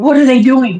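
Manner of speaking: acted alarmed mother voice, high and panicked. Retelling a mother waking the speaker at three am: imitating a panicked mom. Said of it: "she's all in this panic".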